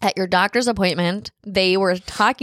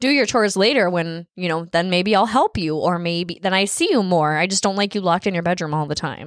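plain

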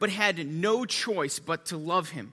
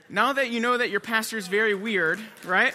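ordinary talk

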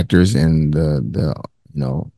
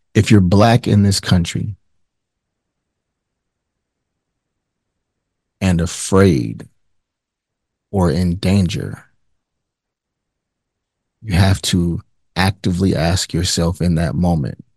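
speaking in a low voice. Sick to their stomach, the speaker struggles through doing their job; low voice. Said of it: "Forgive me if my voice is low".

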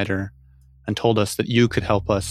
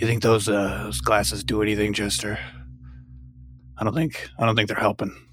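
whispering voice. Whispering an aside to Chester while another character reads: whisper. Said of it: "I'm gonna whisper to Chester".

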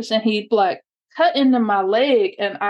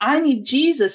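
mock desperate, pleading cry, screamed out; 3 semitones higher than usual. Retelling being dragged through the dirt, retelling a scream. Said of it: "And screaming like".

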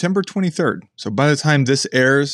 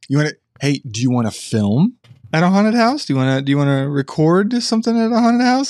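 coaxing voice as if talking to a dog; 4 semitones higher than usual. Asking about fall activities, talking like to a dog. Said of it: "Or are you talking to the dog still?".

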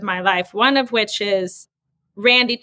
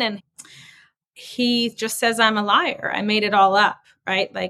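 plain

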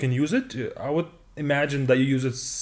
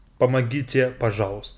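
usual speaking voice

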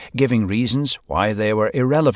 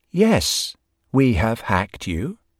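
calm, cool, assured, confident tone. Narrator reading Lola beginning her speech to the room, in a calm, confident voice. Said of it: "she said in a calm and confident voice".

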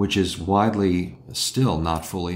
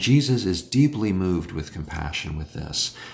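usual speaking voice

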